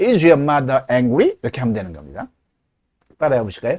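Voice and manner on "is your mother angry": pitch climbs on final word angry. Teacher showing yes-no question intonation: rising pitch at the end. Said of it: "의문사 육하원칙이 없으면 무조건 뒤를 올려 읽습니다".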